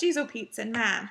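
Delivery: put-on Michigan accent. Speaker recalling what she says when someone comes home, Michigan accent. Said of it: "my Michigan comes back".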